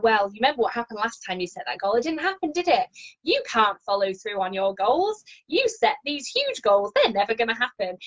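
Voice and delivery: lofty, superior, haughty, condescending scolding tone. Demonstrating what the speaker's inner critic sounds like, high and mighty voice. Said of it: "in that very high and mighty voice".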